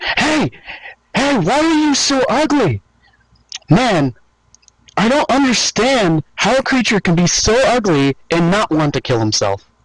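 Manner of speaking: high, sneering, vicious mockery. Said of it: "I'm going to viciously mock".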